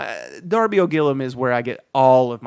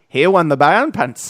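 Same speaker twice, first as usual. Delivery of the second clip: loud, badly done cartoon duck voice; 4 semitones higher, 6 dB louder than usual. Joking about a gritty DuckTales reboot, bad DuckTales voice. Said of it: "That's not a good one".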